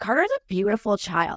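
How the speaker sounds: ordinary talk, nothing marked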